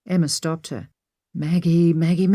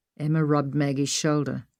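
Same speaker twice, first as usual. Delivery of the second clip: ordinary delivery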